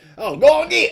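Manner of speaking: put-on loud, very high-pitched Texan accent. Imitating Dustin's line from the show: Dustin impression with Texan accent. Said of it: "anytime I could do a fucking impression of a, of an accent".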